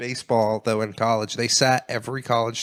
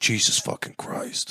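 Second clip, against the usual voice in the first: deepest bass voice, very deep and dead serious; 3 dB quieter than usual. Retelling a college kid reacting as someone walks by: imitating Fat Levine's deep voice. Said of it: "he just had like the deepest voice".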